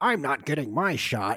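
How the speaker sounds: grouchy character voice. Imagining Oscar the Grouch refusing a vaccine: Oscar the Grouch voice. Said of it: "Oscar the Grouch is like".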